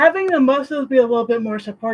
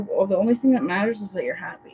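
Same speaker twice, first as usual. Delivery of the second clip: ordinary talk, nothing marked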